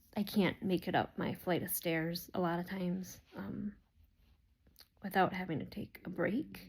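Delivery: growing emotional mid-sentence, struggling to get words out. Describing her daily struggles with dizziness and stairs, getting emotional. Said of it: "Sorry, I'm getting emotional".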